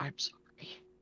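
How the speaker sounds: near-silent whisper, mouthing the words. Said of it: "I'm mouthing it".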